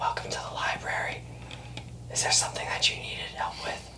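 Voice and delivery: very quiet, hushed whisper. Game master voices a halfling shelving library books, greeting the party: whispering halfling librarian. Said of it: "he whispers to you".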